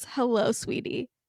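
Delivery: quiet, acted-out whisper. Recounting a tv scene, the speaker acts out a character's greeting: retelling a whisper. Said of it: "he just whispers".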